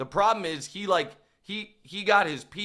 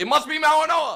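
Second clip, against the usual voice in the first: loud, very high shout; 9 semitones higher, 6 dB louder than usual. Retelling what was shouted as the pick was reported: retelling a yell. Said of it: "I just yelled".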